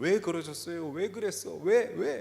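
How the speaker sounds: mock heated, anguished emotion boiling over into cry. A parent retelling her prayer to God over her son, retelling an emotional outburst. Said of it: "나중에는 감정이 격해졌는데".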